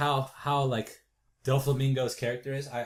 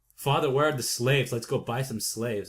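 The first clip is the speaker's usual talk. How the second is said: ordinary delivery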